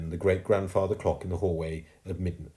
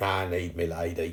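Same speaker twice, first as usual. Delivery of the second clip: ordinary delivery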